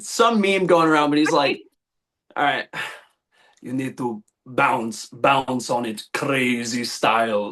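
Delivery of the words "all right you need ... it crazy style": creepy put-on vampire character voice. Repeating a meme line friends say to each other, Nosferatu impression. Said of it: "there's the Nosferatu impression".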